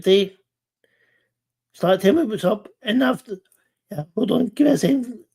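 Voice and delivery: high voice starting to go, breaking. Speaker recalling his sister's reassurance, then asking for a second: voice going. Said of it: "because you can hear my voice going".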